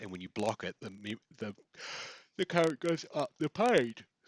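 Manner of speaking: talking through a yawn. Explaining a current trace in a figure, yawning while talking. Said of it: "Sorry for the yawning".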